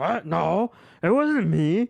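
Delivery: cartoon frog voice, high. Retelling a friend's reply when confronted; Kermit the Frog voice. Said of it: "he talks like Kermit the Frog".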